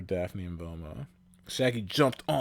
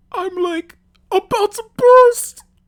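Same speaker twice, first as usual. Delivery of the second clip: put-on cartoon voice, very high, shrill, very loud; 19 dB louder than usual. Reading a line aloud, trying to do it in a put-on character voice. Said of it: "I gotta try to do it in his voice".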